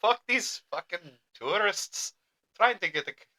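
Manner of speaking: poorly done Scottish accent. Joking with another speaker, attempting a bad Scottish accent. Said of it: "I can't do a Scottish voice".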